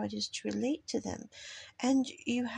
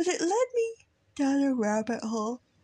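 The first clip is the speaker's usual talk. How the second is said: loud words stretched out through a yawn; 4 semitones higher, 6 dB louder than usual. Talking late at night, speaking through a yawn. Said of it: "I'm sorry, I'm yawning".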